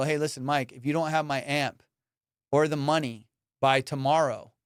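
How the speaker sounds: normal talking voice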